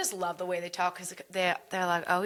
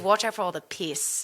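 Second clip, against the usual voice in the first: put-on New Zealand accent. Retelling a sign seen on a plane in new zealand: kiwi accent. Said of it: "mine's actually a bit of a Kiwi accent".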